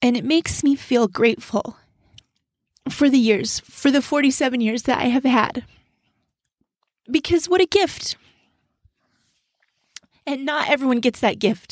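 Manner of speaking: crying through every word, tearful, voice breaking. Speaker talking about letters received over the years, crying while speaking. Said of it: "I did not mean to cry, but look, here I am crying".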